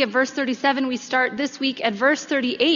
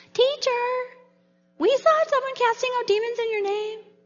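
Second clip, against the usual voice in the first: put-on very high, whiny little-kid tattletale voice; 10 semitones higher than usual. Retelling a passage to listeners, voicing the disciples, in a little kid tattletale voice. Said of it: "in like the little kid tattletale voice".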